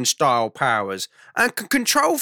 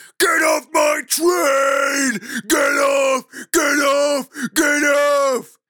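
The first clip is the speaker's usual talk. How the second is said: acted, very slow, high-pitched, dragged-out commanding tone; 5 semitones higher than usual. Retelling a dream where a man on a train platform starts shouting. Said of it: "a bloke with funny eyes starts shouting".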